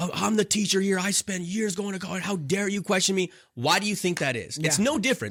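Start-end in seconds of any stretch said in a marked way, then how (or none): 0.0-3.3 mock outraged, angry, indignant teacher yelling. Retelling how a teacher reacts when a student questions him, retelling a teacher yelling. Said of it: "he just starts yelling at the guy".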